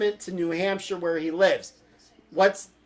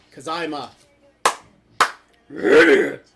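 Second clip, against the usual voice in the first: voice dropped low and booming; 4 semitones lower, 6 dB louder than usual. Mocking themself, the speaker slips into a Cookie Monster voice. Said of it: "trying to sound like the Cookie Monster".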